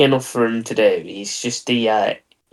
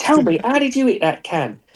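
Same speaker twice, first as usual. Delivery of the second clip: put-on frustrated voice, higher; 12 semitones higher than usual. Retelling a friend's failed can shooting: imitating a friend missing cans. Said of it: "your impression of you, me".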